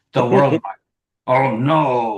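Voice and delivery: slow, grave, dramatic nightly-news reader voice. Imitating a nightly news person adding gravity: dramatic and slow. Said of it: "when you read anything dramatically and slowly, you can take the context right out of it. So when the nightly news person adds gravity".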